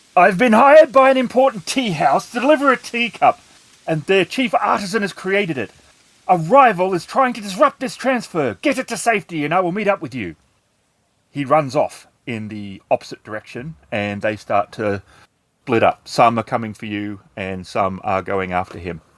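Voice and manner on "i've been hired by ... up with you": shouted, high, raised yell. Voicing a fleeing swordsman warning the players as enemies charge: yelling. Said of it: "and he yells at you".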